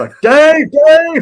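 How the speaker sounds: put-on very high, very loud, panicked yelling in Irish accent. Retelling how a friend woke up screaming for Dave, imitating a panicked Irish yell. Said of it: "It's that that Irish accent".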